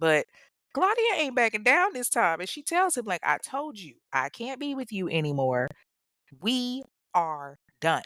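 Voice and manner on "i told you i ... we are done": put-on firm tone at a slower pace. Storyteller acting out Claudia's reply to Kevin, imitating Claudia's firm tone. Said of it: "she bosses the fuck up".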